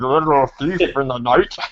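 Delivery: put-on silly, dumb movie voice. Describing a movie scene, the speaker mimics a voice that comes in, dumb voice. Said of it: "this dumb voice comes in".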